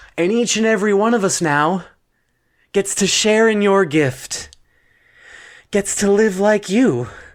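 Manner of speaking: high-pitched, sarcastic, mock-praising tone. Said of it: "I'm not even sure I'm being sarcastic".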